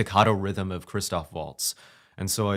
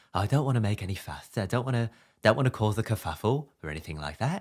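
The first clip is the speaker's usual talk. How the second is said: lisping voice, s in "fuss" lisped; 2 semitones higher than usual. Explaining where his character Ooga Booga came from, doing a Little Britain character with a lisp. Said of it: "a lisp".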